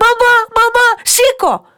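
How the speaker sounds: shrill, very high, loud calling cry. Narrator reading a bear cub waking its mother during a fire, shouting. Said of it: "φώναζε και το παιδί της".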